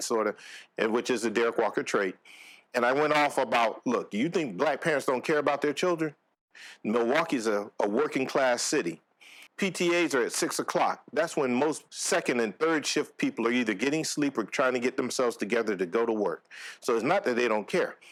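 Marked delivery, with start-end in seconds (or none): none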